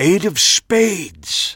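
loud stage whisper. A character repeats the card just turned over: loud stage whisper. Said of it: "Max said in a loud stage whisper".

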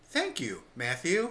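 put-on mechanical, robot-like delivery. Recalling how she thanked readers who called in, speaker uses a robotic voice. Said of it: "almost like a robot was doing it".

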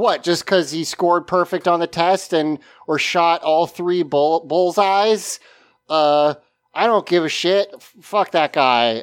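ordinary talk, nothing marked

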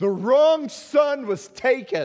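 very high, very loud, shrill, drawn-out raging scream. Retelling a movie scene where a grieving father screams at his son: imitating a father screaming. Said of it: "he screams at his son".

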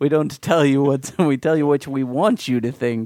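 put-on, 1980s-style Russian accent. Joking about what a government tells people: put-on 1980s Russian accent. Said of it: "I appreciated your accent there".

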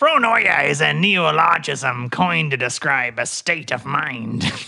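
put-on pirate ship's captain reading voice. Reading a definition aloud, in a Captain Scurvy voice. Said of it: "I'm going back to normal".

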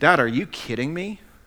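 acted-out disgusted tone. Retelling the older brother's complaint to his father: acting out a disgusted tone. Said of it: "the disgust in his tone of voice".

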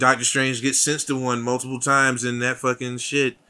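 ordinary talk

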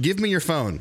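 put-on dead serious child voice, stern and no-nonsense. Retelling a five-year-old's demand in a traffic jam: imitating a dead serious child. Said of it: "she's dead serious when she says this".

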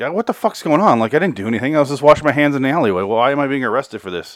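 frantic, fast, freaked-out, rattled-off babble. Retelling a movie scene where a suspect gets interviewed, imitating someone freaking out. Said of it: "Eddie is freaking out".

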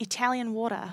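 fake Australian male accent. Imitating an Australian guy met in Florence: imitating an Australian guy's accent. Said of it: "imitating this Australian guy that I met".

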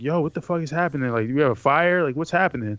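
put-on groggy, half-asleep sounding voice. Retelling being jerked out of bed by a sister: imitating a groggy voice. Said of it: "and I'm half groggy".

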